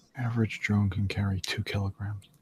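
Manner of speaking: muttered under breath. A game narrator voices a character's aside during play: muttered under her breath. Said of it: "kind of say under her breath".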